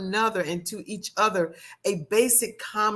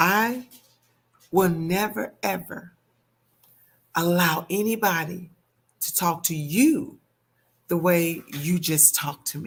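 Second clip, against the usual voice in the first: put-on very quiet voice; 3 semitones lower than usual. Retelling what a partner said during an argument: imitating a very quiet voice. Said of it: "very quietly, he said".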